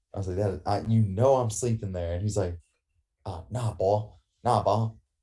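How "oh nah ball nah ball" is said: deliberately odd, slow, weird put-on Cajun accent. Retelling someone taking the speaker's sleeping spot: weird Cajun accent on purpose. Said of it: "he does this weird Cajun accent on purpose".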